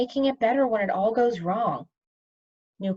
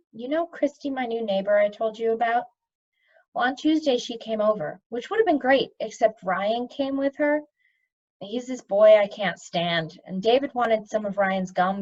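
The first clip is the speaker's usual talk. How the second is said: plain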